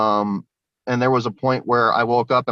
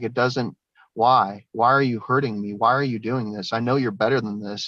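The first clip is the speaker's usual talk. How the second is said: put-on tearful, crying, begging voice. Recounting pleading with a girl taking notes, retelling own crying plea. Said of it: "I started crying to her".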